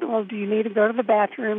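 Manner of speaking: ordinary delivery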